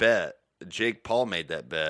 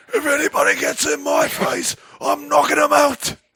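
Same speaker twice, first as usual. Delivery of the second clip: very loud, high-pitched bellowing voice; 9 dB louder than usual. Quoting a threat right after it plays: John Fury impression. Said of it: "Bisping has the best John Fury, uh, impression".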